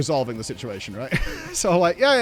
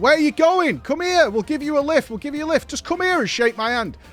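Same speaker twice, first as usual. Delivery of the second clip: put-on shouting, much higher; 11 semitones higher than usual. Retelling how a man got out of his car and shouted at him, retelling a shout. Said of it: "And he's shouting like".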